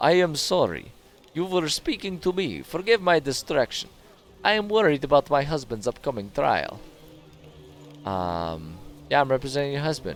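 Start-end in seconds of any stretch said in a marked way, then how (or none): 0.0-6.8 put-on Russian accent throughout. A character worried about her husband's trial talks to his representative, Russian accent. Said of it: "was that like a Russian accent that we got from her?".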